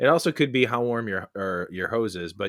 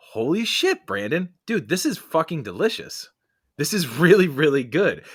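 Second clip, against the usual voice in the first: mock stunned, raised-pitch, can't-believe-it gush; 7 semitones higher, 4 dB louder than usual. Retelling first sip of a friend's beer: retelling own shocked reaction. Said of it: "and I sound like I'm shocked".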